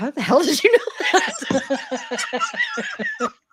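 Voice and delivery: put-on, very slow, high, drawn-out, laughing, freaked-out bewilderment. Retelling a mother's reaction to being seen on camera: imitating mom freaked out.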